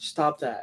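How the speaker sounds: soft, calm, even-tempered breathy whisper. Retelling how the calm instructor would scold: imitating calm, never-angry voice. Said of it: "his octave never went up. I never saw the man mad".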